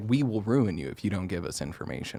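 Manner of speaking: low, menacing mafia-style mobster voice. Retelling how company bigwigs confronted a leaker: imitating a mafia-style threat. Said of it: "straight up mafia style".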